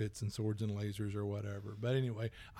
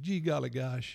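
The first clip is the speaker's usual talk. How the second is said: put-on slight Southern accent; 3 semitones higher than usual. Describing a show's young character, imitating Kenneth, slight Southern accent. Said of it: "a little bit of Southern accent".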